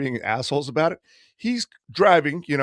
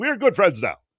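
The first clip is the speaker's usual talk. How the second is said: put-on movie character voice, higher; 6 semitones higher than usual. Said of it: "it sounded like Coming to America".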